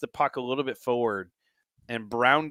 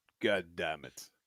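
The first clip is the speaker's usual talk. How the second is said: put-on low Russian-accented mutter; 6 semitones lower, 10 dB quieter than usual. Guessing how an injured player sounds listening live, Ivan Drago voice. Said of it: "just sounds like Ivan Drago all of a sudden".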